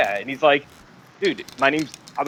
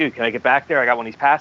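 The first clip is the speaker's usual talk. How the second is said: ordinary talk, nothing marked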